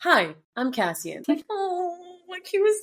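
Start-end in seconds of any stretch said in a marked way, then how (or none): 0.0-1.2 acted young boy voice. Imitating a character introducing himself: imitating Cassian's boyish greeting. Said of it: "the boyishness of Cassian".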